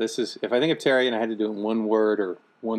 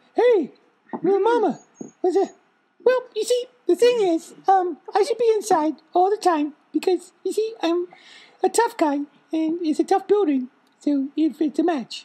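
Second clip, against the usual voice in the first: very high, squeaky put-on dog voice with underbite sound; 4 dB louder than usual. Molly won't do her voice on the phone, so another speaker does it: imitating Molly's voice. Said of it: "Molly does a voice".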